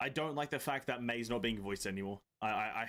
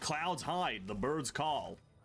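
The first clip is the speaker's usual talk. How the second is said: delivered in an American accent. Reacting to a game character's voice line: Kazuha with American accent. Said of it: "Imagine Kazuha with an American accent".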